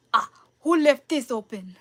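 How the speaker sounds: put-on fumbling, botched Russian accent. Recalling a favorite moment in a play, voicing a character, bad russian accent. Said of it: "I can't do a Russian accent".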